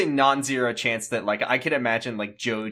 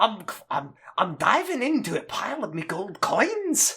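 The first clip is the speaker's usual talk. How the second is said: jovial cartoon character voice, much higher pitch; 8 semitones higher than usual. Voicing the 12th Doctor as his voice drifts, jovial Scrooge McDuck voice. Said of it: "I don't remember the 12th Doctor being quite so jovial".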